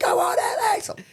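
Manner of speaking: very high, cheering scream. Retelling a girl at a fight cheering for the fighter: imitating someone screaming. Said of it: "she's screaming".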